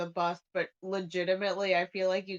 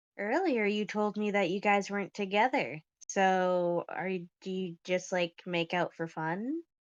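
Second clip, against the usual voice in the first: theatrical stage whisper. Voicing a character teasing another player's character: stage whisper. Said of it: "it's like a stage whisper".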